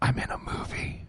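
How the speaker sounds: hushed, whispered words. Recounting how someone answered a phone call, retelling a whisper. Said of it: "Tori whispers".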